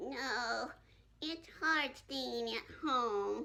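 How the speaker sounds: sad, unhappy, downcast. Told they don't sound happy, the speaker answers: unhappy. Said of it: "you don't sound very happy".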